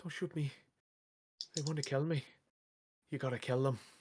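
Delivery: put-on sweet-voiced Irish accent. Voicing her as she speaks into Ronan's mind, in a sweet Irish brogue. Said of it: "her sweet Irish brogue".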